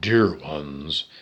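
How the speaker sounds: very deep, low-pitched voice. Mimicking how a speaker who talks at length always starts off, deep voice. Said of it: "in a deep voice".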